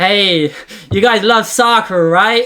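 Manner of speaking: attempted American accent. Asked by the other speaker to say something else in an American accent; American accent. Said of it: "I want to hear something else with an American accent".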